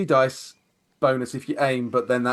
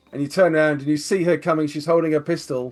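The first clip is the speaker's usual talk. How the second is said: ordinary talk, nothing marked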